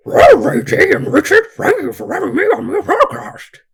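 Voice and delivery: loud, high-pitched, belted cartoon-dog voice. Doctor on a podcast asked by the hosts for his best Scooby-Doo impression, Scooby-Doo voice. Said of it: "give us your best uh, Scooby-Doo impression".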